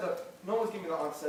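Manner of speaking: ordinary delivery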